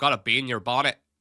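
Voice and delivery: attempted Belfast accent. Speaker trying out a Belfast accent for listeners, put-on Belfast accent. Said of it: "That's my Belfast accent".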